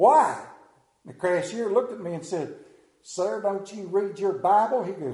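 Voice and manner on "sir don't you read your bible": put-on deep Southern drawl. Retelling a story, voicing a cashier's reply in a deep southern drawl. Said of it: "in that deep southern drawl".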